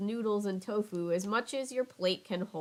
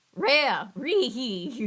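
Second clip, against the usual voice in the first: put-on cartoon dog voice, higher and louder; 3 semitones higher, 7 dB louder than usual. Reading a story aloud, voicing Scooby chuckling: Scooby-Doo voice. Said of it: "Here's the Scooby-Doo, uh, impression".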